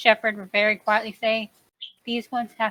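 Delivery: plain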